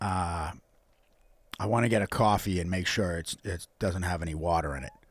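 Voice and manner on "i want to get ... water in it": New York accent dropping low and soft. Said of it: "Let me hear your New York accent".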